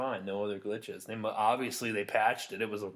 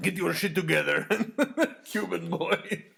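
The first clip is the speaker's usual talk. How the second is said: loud, bad, cheesy put-on Russian accent; 8 semitones higher, 7 dB louder than usual. Retelling what someone shouted at the speaker: bad Russian accent. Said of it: "we'll just say he was Russian".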